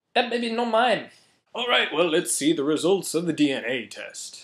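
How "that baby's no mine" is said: clumsy, fake Japanese accent, pitched up. Acting out a man on Maury's show denying the baby is his, bad Japanese accent. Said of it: "I don't know how to do a Japanese accent".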